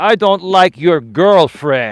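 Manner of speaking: put-on loud, slow, heavy Greek accent, laid on thick. Retelling what his dad said out of the blue, in a thick Greek accent. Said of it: "with his thick Greek accent".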